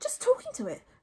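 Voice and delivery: hushed, breathy, sheepish, embarrassed mumble. Narrator reads Hiccup answering Fishlegs after being caught talking to a dragon, as an embarrassed mumble. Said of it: "mumbled Hiccup, very embarrassed".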